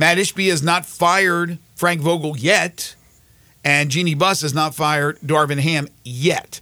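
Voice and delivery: yet leaned on in a slow delivery.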